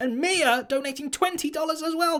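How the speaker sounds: voice jumps up a register, high and rising. Thanking a new subscriber and a donor: voice going higher pitch. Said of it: "My voice just went higher pitch".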